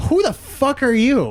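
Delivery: high, slow, baffled crowd voice. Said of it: "They're like".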